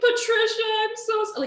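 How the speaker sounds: very high, very loud sobbing blubber. Retelling a guy's crying voicemail apology: imitating someone crying. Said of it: "He's crying or pretending to cry".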